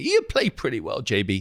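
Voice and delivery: mock condescending, quite patronizing pat-on-the-head tone. Retelling a golf partner's remark after a round: imitating a friend's patronizing tone. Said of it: "he's go quite patronizingly".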